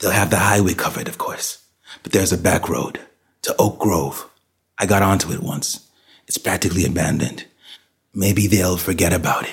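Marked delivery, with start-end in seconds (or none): none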